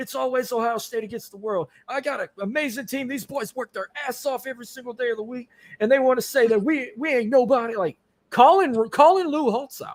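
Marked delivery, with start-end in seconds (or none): 0.0-7.8 screaming, fired-up angry hollering. Retelling Ryan Day's postgame interview, hollering and screaming. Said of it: "he started like hollering and screaming".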